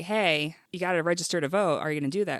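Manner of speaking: plain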